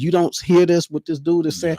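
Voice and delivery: mock screaming. Retelling how a community cries out about what they hear: imitating people screaming.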